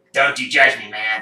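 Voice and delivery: talking parrot character voice. Voicing a parrot who answers an accusation: voicing a talking parrot. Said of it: "the parrot turns and he goes".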